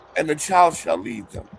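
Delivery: ordinary delivery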